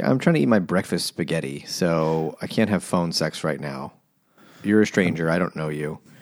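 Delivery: ordinary talk, nothing marked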